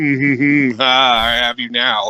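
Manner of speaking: put-on smug, gloating voice. Retelling a game scene where Leia captures Vader: imitating Leia smugly. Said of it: "Leia's just, like, smugly".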